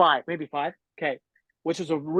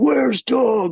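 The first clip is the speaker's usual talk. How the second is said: big, loud, booming shout; 7 semitones higher, 7 dB louder than usual. Retelling hearing James ask from the door for Doug: imitating James's deep booming voice. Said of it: "that deep booming voice".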